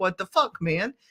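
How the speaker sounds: put-on defensive, blunt delivery. Acting out own reaction when someone says something hurtful: imitating own defensive reaction. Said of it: "there is a little bit of defensiveness".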